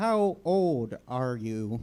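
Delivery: level, flat, machine-like robot voice. Imitating how he talks when asking questions, talking like a robot. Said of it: "talking like a robot".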